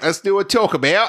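put-on Australian accent. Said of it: "Do your Australian voice".

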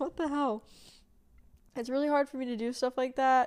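tearing up, teary, choked-up voice. Telling listeners how last night went, tearing up. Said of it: "tearing up right now talking about it".

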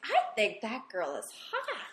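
put-on sing-song Valley Girl accent. Retelling a remark made from a stadium seat, in a Valley Girl accent. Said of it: "I totally said it in the Valley Girl accent".

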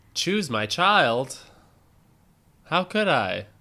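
desperate, agonised, high-pitched, very loud cry. Quoting a film scene as an impression: Sophie's Choice impression. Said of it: "Is that your impression of Sophie's Choice?".

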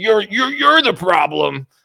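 put-on angry old woman voice, shrill, loud screeching yell. Quoting an angry grandma in the comment section, imitating her screaming. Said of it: "She's screaming at me".

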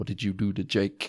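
put-on defensive tone. Retelling a TV scene where Sisko gets defensive: imitating Sisko getting defensive. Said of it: "Sisko gets really defensive and he's like".

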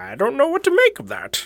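very high froggy voice. Retelling what Jordan Peterson said in an interview video: Jordan Peterson voice. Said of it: "Is that your Jordan Peterson voice?".

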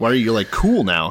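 plain

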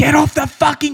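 shrill, very high, screamed outburst. Speaker retells runners coming back the other way on the course: retelling a scream.

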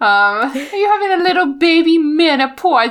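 put-on sweet, high-pitched, cutesy baby talk voice. The speaker talks to the cat Penny in a cute voice. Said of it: "You can make anything sound cute in the right voice".

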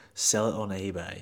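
muttered under breath. Retelling a remark someone made that others overheard, muttered under breath. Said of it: "under his breath".

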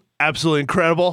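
sarcastic tone. Answering a how-are-you-doing greeting: sarcastic tone. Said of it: "we can just hear it in your voice".

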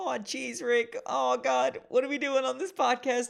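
very high, loud, rough character voice. Doing an impression of Morty when asked by the other speaker. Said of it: "give me the best impression of".

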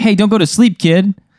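rising irritated anger. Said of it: "you're peeing me off right now".

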